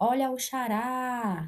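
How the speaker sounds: lingering, drawn-out stress on final rá of xará. Teaching a simple trick to find the stressed syllable: stress on last syllable rá of xará. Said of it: "Tá vendo que eu puxo mais, eu demoro mais na última sílaba?".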